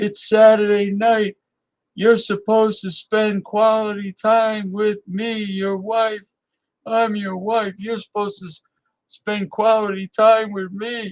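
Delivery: mock, high, screeching, screaming voice. Acting out what the wives would say to their husbands: imitating wives screaming. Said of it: "predict the women right now screaming".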